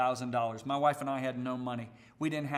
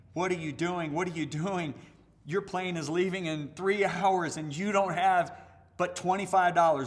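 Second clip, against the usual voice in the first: acted, high-pitched screaming voice; 5 semitones higher, 4 dB louder than usual. Retelling his own anxious thoughts before a flight: imitating his inner voice screaming. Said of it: "my head is screaming at me".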